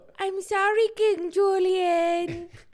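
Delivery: very high, very slow, stretched-out delivery. Saying a not-really-sorry apology: Mort from Madagascar voice. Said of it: "my "I'm sorry ... voice is Mort from Madagascar".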